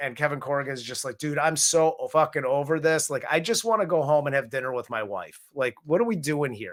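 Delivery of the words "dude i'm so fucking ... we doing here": play-acted, fed-up, exasperated, arguing rant. Retelling a character's line as they start arguing: imitating a fed-up argument. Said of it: "they start arguing".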